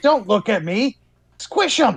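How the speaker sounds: put-on monster mage character voice. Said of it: "her best monster mage voice".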